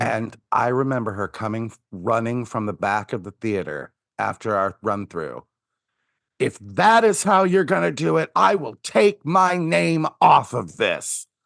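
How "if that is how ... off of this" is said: very high-pitched, shrill tantrum outburst. Recalling a high school drama teacher running in after a run-through, imitating a fit. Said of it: "throwing a fit".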